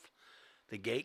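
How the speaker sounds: plain reading voice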